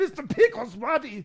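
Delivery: very high, loud, terrible put-on fake Bavarian accent. Retelling calling their dog Mister Pickles, in a terrible fake Bavarian accent. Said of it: "this terrible Bavarian accent the whole".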